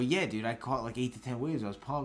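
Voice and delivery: ordinary talk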